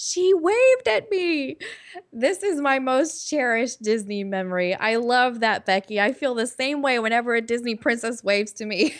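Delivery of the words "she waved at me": mock very high, very slow, awestruck cry. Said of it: "with a starstruck voice, she yelled".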